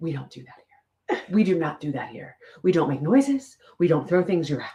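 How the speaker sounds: whisper-screamed, screaming but in a whisper. Retelling an old lady on a golf cart at a country club, imitating a whisper-scream. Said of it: "she was whisper screaming at me".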